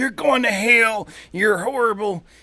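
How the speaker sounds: very high put-on Southern accent, ranting. Describing a local street preacher by contrast with hateful ones, put-on southern accent. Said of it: "I put on a southern accent for that".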